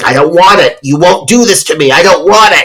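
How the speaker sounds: high, frantic, freaked-out protesting voice. Retelling a movie scene where a tied-down patient freaks out: imitating someone freaking out. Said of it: "he's freaking out. He's like".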